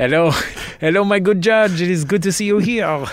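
high, absurd, ridiculous put-on French accent. Greeting the judge at the end of a case: ridiculous put-on French accent. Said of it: "in these ridiculous accents".

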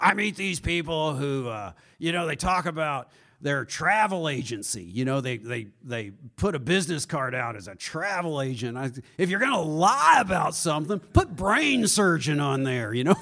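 slow, gravelly businessman voice. Quoting a businessman friend, imitating Gary Genter's gravelly voice. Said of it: "He's got this real gravelly voice".

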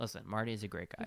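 plain

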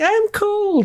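very high, tiny, squeaky chipmunk voice. Recalling the show's microscopic Nanoborgites, quoting them in a Nanoborgite chipmunk voice. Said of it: "they're like little chipmunk voices".

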